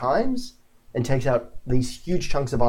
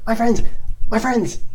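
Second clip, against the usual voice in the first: small yelling voice, much higher; 10 semitones higher, 4 dB louder than usual. Narrating to the players, voicing someone calling after them as they leave: small voice yelling. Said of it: "a small voice yelling after you".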